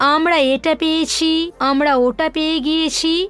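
usual speaking voice

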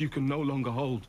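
ordinary talk, nothing marked

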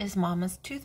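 ordinary delivery

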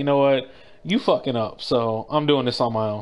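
ordinary delivery

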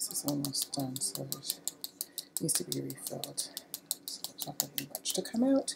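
soft mumble under the breath. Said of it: "now I'm mumbling to myself".

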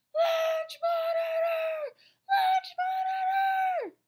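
panicked, desperate shout, very high, loud, drawn out. Melvin, on the fourth grade lunch table waving his arms, crying out at top of voice. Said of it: "cried at the top of his voice".

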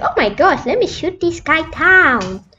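thin, squeaky, high-pitched put-on voice. Imitating what other players say in the game, in a squeaky voice. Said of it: "squeaky voice by the way".

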